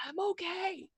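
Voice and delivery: theatrical whisper. Looking up and calling down to someone below, stage whisper. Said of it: "I stage whisper".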